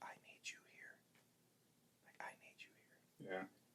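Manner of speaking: soft, very quiet, barely voiced whisper. Recalling what she whispered at the table while eating, retelling a whisper. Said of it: "she just whispers".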